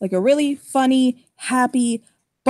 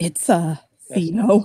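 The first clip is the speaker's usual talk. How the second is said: hushed whisper, lower; 6 semitones lower than usual. Voicing a character who looks left and right, then leans in: whispering. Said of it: "he'll lean in and whisper".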